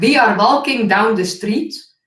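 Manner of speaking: loud, clumsy, mangled non-native English pronunciation. Retelling how an English teacher spoke a sentence: imitating teacher's bad English pronunciation. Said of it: "And he said it like".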